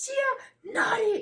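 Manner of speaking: put-on very high, very loud, shrill, piercing toddler scream. Retelling a two-year-old screaming at a friend: imitating a toddler screaming. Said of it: "My two-year-old was screaming at her".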